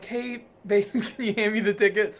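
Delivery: casual delivery while laughing. Retelling asking the fiance for the tickets, imitating laughing while talking. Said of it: "laughingly was like".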